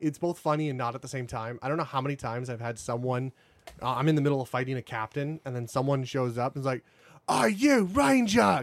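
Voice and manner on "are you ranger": put-on swaggering, very high, shrill, raised English accent. Describing enemies who show up mid-fight in a game, imitating their cocky english accent. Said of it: "they all have the cocky English accent".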